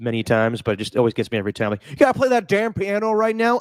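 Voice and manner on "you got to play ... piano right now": mock, pitched-up angry yell. Quoting a movie scene where a father yells at his daughter: imitating a father yelling. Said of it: "he yells at his daughter for playing the piano".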